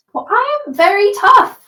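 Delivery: tiny, very high, small voice. Replying to Sarazo, the armored character speaks: small voice from inside armor. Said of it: "he says in his small voice from within all the armor".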